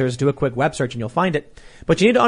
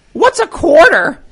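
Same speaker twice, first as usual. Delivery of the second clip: very high, very loud cartoon voice, blurted; 9 dB louder than usual. Retelling a cartoon joke in a car: Family Guy's Bill Gates voice. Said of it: "he talks like this".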